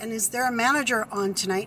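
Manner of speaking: ordinary delivery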